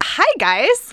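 high, loud, put-on girl voice.

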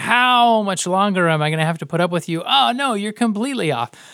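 exasperated, fed-up frustration. Describing how Jesus reacted to his disciples, the speaker imitates Jesus's frustration. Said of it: "You would hear the frustration in him".

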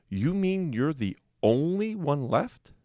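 put-on astonishment. A man stares at the last boy left and asks, feigned surprise. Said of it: "pretending to be surprised".

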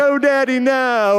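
tearful, crying, pleading voice. Retelling a childhood fight with his dad over a hamburger, acting out crying. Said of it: "And I'm crying".

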